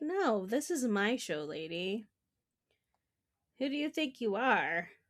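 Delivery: small gentle kitten voice. Speaking for the kitten on the guest's desk: Havoc's tiny kitten voice. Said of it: "tiny kitten voice".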